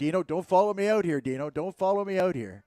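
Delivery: put-on yelling. Retelling how his partner yelled at dino on the field, retelling a yell. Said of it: "and he's yelling at him".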